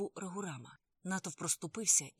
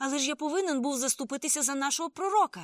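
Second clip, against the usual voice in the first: raised, worked-up, agitated, unsettled voice; 7 semitones higher, 8 dB louder than usual. Told off for fighting a friend, a man answers back, still agitated. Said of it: "не міг заспокоїтися Фарух".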